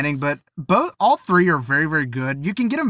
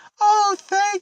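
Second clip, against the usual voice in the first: very bad put-on old lady voice, much higher. Recounting a scene, the speaker quotes the goblin in a very bad old lady voice. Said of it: "very bad old lady voice".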